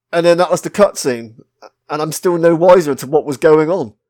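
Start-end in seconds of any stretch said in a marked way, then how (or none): none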